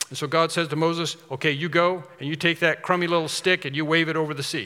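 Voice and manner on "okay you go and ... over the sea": plain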